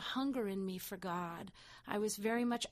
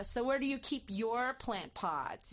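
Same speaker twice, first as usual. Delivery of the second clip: mock-hostile, acted hostile tone; 2 semitones higher than usual. Retelling their own past question to another man, mock-hostile tone. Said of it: "very hostily".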